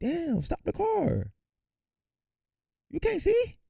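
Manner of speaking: mock very high, swooping yell. Joking about how to react to being hit by a car: pretend yelling at a driver. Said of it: "I would yell at your car".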